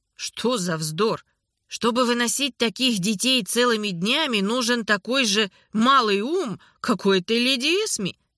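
ordinary talk

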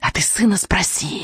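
whispered, hissing witch voice. Reading a story aloud, the narrator voices a witch's retort, hissing. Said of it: "прошипела ведьма".

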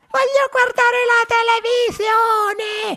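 put-on very high, screaming, shrieking child's tantrum voice. Narrator reads a tiny boy throwing a tantrum in his mother's palm, shrieking.

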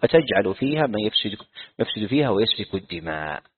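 normal talking voice

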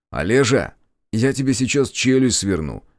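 ordinary delivery

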